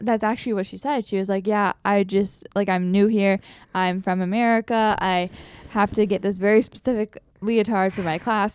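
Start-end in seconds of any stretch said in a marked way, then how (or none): none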